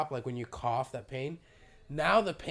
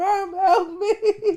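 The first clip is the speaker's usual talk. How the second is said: mock, very high, loud wailing cry; 11 dB louder than usual. Retelling calling to her mom for help while stressed; imitating crying for help. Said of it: "Literally crying for help to mommy".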